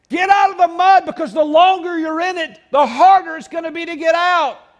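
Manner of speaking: high, loud urgent calling out.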